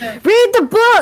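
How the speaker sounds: squeaky, very high-pitched yelling. Retelling how Milan peeks up from the corner and yells: Milan's squeaky yelling voice. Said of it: "his voice becomes really squeaky".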